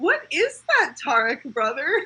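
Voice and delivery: genuinely startled, surprised tone. Retelling a scene where Levon points out a hidden bug: imitating a surprised tone. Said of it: "says in a surprised tone".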